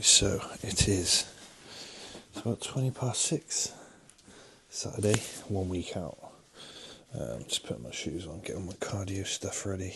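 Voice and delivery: quiet speech. Talking early in the morning while someone sleeps nearby: speaking quietly. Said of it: "I'm speaking a little bit quietly because Nancy's asleep".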